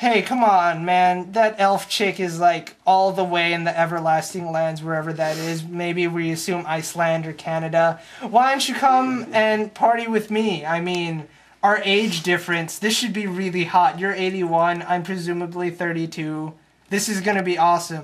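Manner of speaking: plain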